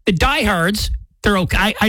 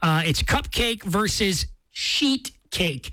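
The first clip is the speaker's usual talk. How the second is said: said nice and slow, drawn-out and careful. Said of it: "I have to say it slow".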